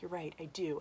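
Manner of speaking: soft, low, defeated, beaten voice.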